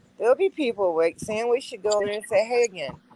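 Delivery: plain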